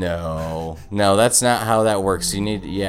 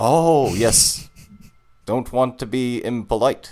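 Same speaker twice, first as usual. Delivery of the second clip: muddled, vague, put-on, slightly posh Australian accent; 3 semitones higher than usual. Replying to another speaker mid-bit, in an unidentified put-on accent. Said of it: "I don't know what accent I'm doing".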